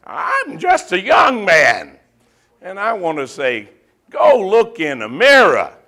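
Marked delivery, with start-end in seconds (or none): 0.2-2.0 aging preacher voice, cracking and breaking up. Mocking aging ministers in the pulpit, imitating a cracking voice. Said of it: "their voice is cracking and they're saying".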